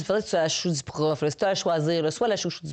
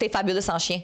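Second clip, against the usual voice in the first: usual speaking voice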